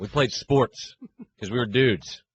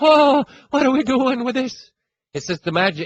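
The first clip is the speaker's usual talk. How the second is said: very high, loud cereal-mascot-style leprechaun voice; 13 semitones higher, 5 dB louder than usual. Mocking Cowherd's attempt at a Boston accent, the speaker does the Lucky Charms voice. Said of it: "He does the Lucky Charms voice".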